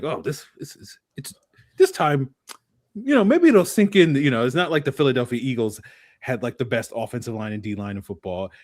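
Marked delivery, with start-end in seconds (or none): 0.0-4.1 feigned naive optimism, dripping sarcasm, high and swooping. Mocking a lesson relearned every year: mock hopeful sarcastic tone. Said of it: "we act like".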